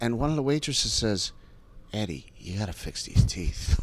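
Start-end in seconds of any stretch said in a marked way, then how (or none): 1.9-3.8 mock earnest, concerned tone, voice dropped low. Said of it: "just a concerned".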